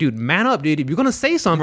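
ordinary talk

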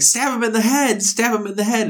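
high-pitched yelling. Recalling how they and their wife yelled while watching, retelling a yell. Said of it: "my wife and I are both yelling like".

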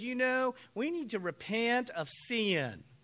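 slow Southern drawl, sin stretched into two syllables. Recalling what the man at a first Bible talk said, in a Southern accent. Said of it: "the guy had a southern accent".

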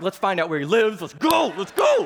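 put-on heated, revved-up, fired-up angry outburst. Retelling their own reaction to another driver: retelling being fired up. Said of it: "I am fired up".

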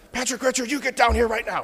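scolding, motherly, calling-down voice. Retelling the Zacchaeus story, imitating how the speaker's mom would call them down. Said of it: "I just hear my mom's voice".

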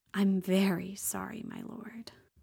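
small, soft, breathless voice. Reading a romance scene aloud, speaking her reply: small, breathless voice. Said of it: "she said in a small, breathless voice".

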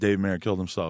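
normal talking voice

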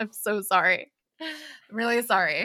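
"sorry" said through giggles and laughter. Apologizing to co-hosts for a dark joke, giggling while apologizing. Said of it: "I say as I keep giggling".

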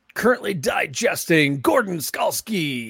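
very slow, stretched-out announcer voice. Giving a shout out to people in the pit: announcing voice. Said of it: "you got the announcing voice on".

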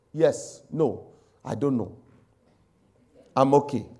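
mock emotionless monotone. Acting out a spouse with no feeling answering, in a mock flat monotone.

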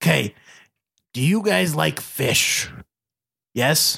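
low voice, sold like a commercial host. Voicing the sponsor Uncle Jerry in a mock ad: Uncle Jerry voice. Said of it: "I totally forgot his voice".

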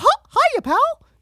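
squeaked out high and loud. Topping the other's impression with a Mickey Mouse voice. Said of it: "Way, way better than yours".

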